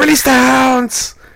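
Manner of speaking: shrill, very high-pitched holler. Retelling running in and shouting the line: retelling a shout. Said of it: "I ran in and shouted to Natty immediately".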